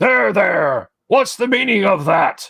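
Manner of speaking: rough orc voice. Narrating a game, the game master voices an approaching orc: gruff orcish voice. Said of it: "orcish accent and voice say".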